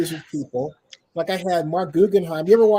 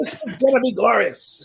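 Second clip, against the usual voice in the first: put-on play-by-play announcer voice, higher pitched; 4 semitones higher than usual. Calling the Chiefs getting the ball: Chris Berman voice. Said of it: "I'm trying to sound like Chris Berman".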